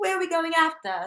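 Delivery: put-on London English accent. Asking the group where they're going after: put-on london accent. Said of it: "I've been starting talking in a London accent".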